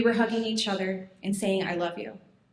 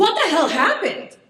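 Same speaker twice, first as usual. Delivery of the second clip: frantic, shocked, raised, high-pitched scream; 7 semitones higher, 9 dB louder than usual. Retelling a phone call about an injury: retelling a scream. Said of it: "I screamed".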